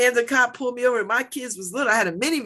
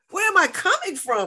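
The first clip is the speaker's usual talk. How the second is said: irritated, annoyed, pitched-up voice; 8 semitones higher than usual. Retelling being pulled over by an officer: retelling annoyed talk. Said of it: "this is how I'm talking to him 'cause I'm getting annoyed".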